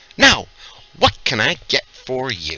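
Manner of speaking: bustling, hospitable, hearty, sing-song innkeeper voice. The game master, as the innkeeper, turns to the newcomers: innkeeper woman character voice. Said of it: "A portly woman bustles about, pouring drinks and serving food. / A portly woman bustles about, pouring drinks and serving food. Travelers, welcome! We've food and drink and rooms, all warm and clean".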